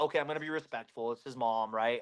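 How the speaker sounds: low, soft, fast, calm, respectful muttering. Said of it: "I'm like".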